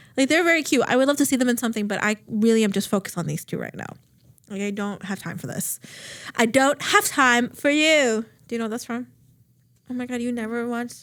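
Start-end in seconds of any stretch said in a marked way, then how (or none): 4.6-8.3 put-on heavy European accent, much slower. Quoting a line from a show about a fake heiress, strong european accent. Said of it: "Like the strong European accent".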